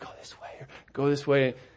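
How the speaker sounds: mock whispering. Retelling hiking in the mountains with family: retelling a whisper. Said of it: "So everything was a whisper".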